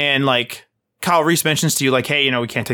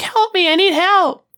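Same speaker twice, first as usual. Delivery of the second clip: put-on very high, tiny little girl voice; 4 dB louder than usual. Retelling a game scene where someone calls for help: little girl voice. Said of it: "it sounds like a little girl going".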